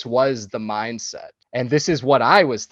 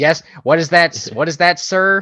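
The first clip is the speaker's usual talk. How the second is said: loud, put-on old-timey, old-fashioned voice; 4 semitones higher, 5 dB louder than usual. Discussing a movie, imitating an actor's line in an old-timey voice. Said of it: "just does that like old-timey voice really well too".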